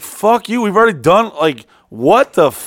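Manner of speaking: put-on furious, offended, heated and loud voice. Retelling an angry reply to an overpriced quote: retelling his own heated reply. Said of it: "I'm getting heated just talking about".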